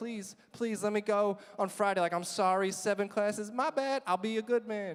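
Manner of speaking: play-acted pleading, begging voice, repeated over and over. Retelling asking to be allowed to go to the dance: imitating own begging. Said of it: "And I begged and I begged".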